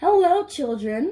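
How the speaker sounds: sweet voice. Reading a story aloud, someone greets the children in the classroom, sweet voice. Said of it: "someone said in a sweet voice".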